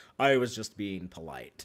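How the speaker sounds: dead serious, low voice. Discussing an early TNG episode ending, quoting the Klingon, super serious Michael Dorn voice. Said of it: "the scary Klingon guy with a super serious voice saying like".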